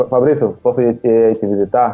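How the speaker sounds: usual speaking voice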